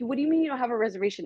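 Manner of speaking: mock frantic, fast, panicked, disbelieving delivery. Retelling the group's reaction to no dinner reservation: imitating people panicking. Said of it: "everybody's panicking".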